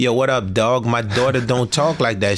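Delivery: normal talking voice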